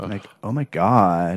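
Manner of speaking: put-on classic Valley Girl voice, drawn-out God. Discussing a valley girl remake, a speaker demonstrates the style: valley girl voice. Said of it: "That's Valley Girl talk".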